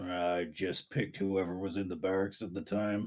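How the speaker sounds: hulking, very low-pitched ice troll character voice. Voicing the ice troll answering while scratching his chin. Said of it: "he just kinda scratches his chin and goes".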